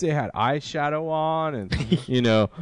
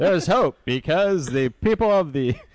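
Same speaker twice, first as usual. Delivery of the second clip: put-on old-time newsreel announcer voice. Retelling a film plot after being told to use the Robotech narrator voice, doing a failed Robotech narrator impression. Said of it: "40s news guy".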